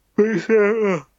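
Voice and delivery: very high voice, words through a yawn. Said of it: "sorry, I'm yawning again".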